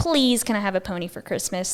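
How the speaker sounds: ordinary talk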